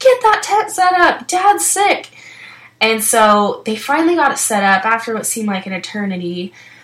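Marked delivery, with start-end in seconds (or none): 0.0-2.1 mock very high pleading yell, intense and desperate. Speaker retells shouting at people setting up a tent for their sick dad, retelling a yell. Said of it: "I'm just yelling at them".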